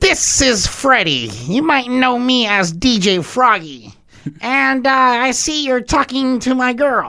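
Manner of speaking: very high-pitched, loud, squeaky voice. Retell how a man introduced himself and brought up his girl, in DJ Froggy's squeaky voice. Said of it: "this guy had a way squeakier voice".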